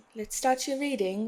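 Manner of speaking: playful put-on British accent, just for fun. Starting a card reading for viewers, joking put-on British accent. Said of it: "Why am I talking like that? Some of you could be British".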